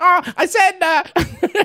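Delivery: very high, whiny little posh voice. Retelling overhearing a guy who forgot to hang up: imitating Gav's whiny posh voice. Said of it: "whiny little posh cunk just going".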